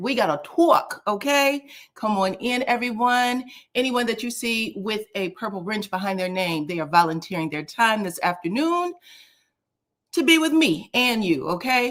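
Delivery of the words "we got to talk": put-on New York accent. Host going live talks to the chat in his New York accent. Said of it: "That's my New York accent".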